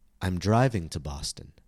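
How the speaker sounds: word "driving" hit hard with strong stress. Pronunciation lesson, contrasting with taking the bus: stress on driving. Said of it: "driving, the newest and most important piece of information, becomes the focus word".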